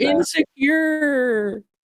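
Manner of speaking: very high, put-on girly voice. Answering a question on air, using a fake girly voice. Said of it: "You were using like a fake girly voice?".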